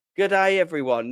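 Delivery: put-on Australian accent. On stream, greeting everyone as the doc arrives, in an australian accent. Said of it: "I've done it in an Australian accent".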